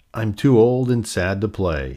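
ordinary delivery

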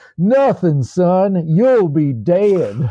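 put-on Southern US accent. Retelling a colonel's answer to a young soldier, in a Southern US accent. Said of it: "this colonel with a Southern accent said".

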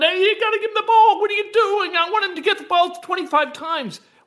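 full-on yelling. Retelling own yelling about giving the running back the ball: imitating own yelling. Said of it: "I'm yelling".

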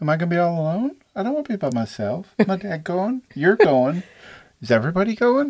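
put-on very high-pitched, small, innocent little girl voice. Describing how she says a line, mimicking an innocent little girl. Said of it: "innocent little girl".

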